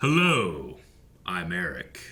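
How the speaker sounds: soulful, strong, deep film narrator voice. Opening a podcast episode about Community, imitating its narrator: Keith David narrator impression. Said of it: "Why are you doing that voice?".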